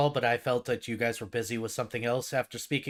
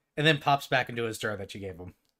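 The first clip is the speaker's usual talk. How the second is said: ordinary talk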